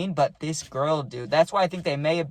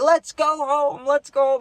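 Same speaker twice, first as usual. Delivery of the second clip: put-on very high, loud drunken holler in a crazy accent; 11 semitones higher, 5 dB louder than usual. Retelling John yelling while drunk as hell: imitating John's drunk accent. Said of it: "but in a in a accent, and he's drunk as hell".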